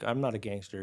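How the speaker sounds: ordinary delivery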